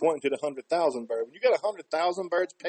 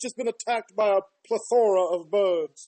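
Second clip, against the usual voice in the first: slow, mock English lady voice. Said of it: "an English lady".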